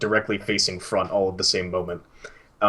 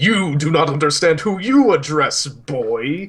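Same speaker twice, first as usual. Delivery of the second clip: put-on elder's loud, slow commanding shout, "boy" stretched out; 8 semitones higher, 6 dB louder than usual. Voicing an elder who half rises from a chair: elder character shouting.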